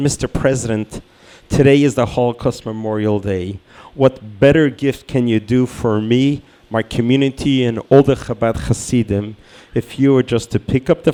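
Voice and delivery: ordinary talk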